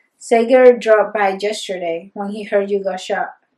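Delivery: ordinary delivery, nothing marked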